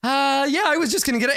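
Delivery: very high, sheepish, guilty, squeaked-out voice.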